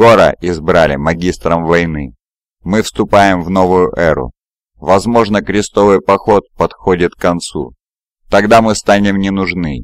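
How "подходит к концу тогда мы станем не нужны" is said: plain reading voice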